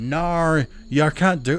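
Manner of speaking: put-on very drawn-out, slow, high Australian accent. Imitating how Australians respond to an American saying, Australian accent. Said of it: "Let me get my Australian accent".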